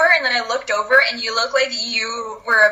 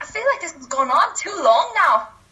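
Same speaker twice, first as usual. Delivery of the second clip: Scottish accent with some Irish accent mixed in; 6 semitones higher than usual. Encouraged to try an accent, speaking in a scottish accent. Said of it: "That is like so Scottish".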